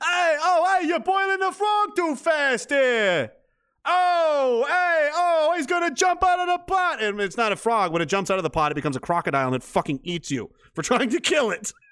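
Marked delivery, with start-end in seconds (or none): 0.0-7.0 very high, slow, drawn-out put-on Italian accent. Speaker riffs after saying he's allowed the italian thing, mock italian accent. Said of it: "I'm allowed to do the Italian thing now".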